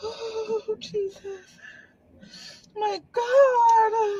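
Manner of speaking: very slow, tearful sobbing, "god" drawn out. Reacting to news from a gift box: crying. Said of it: "I'm a crybaby".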